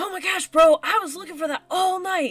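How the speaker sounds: sudden excited lift in the voice, high and loud. Voicing a character who sees his lost bag: perking up excitedly. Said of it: "his eyes widen and he perks up".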